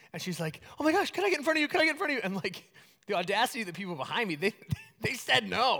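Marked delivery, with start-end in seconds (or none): 0.8-2.2 panicked, frantic pleading, high and rushed. Retelling a woman who ran up frantically in an airport security line, imitating a frantic plea. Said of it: "this lady runs up frantically".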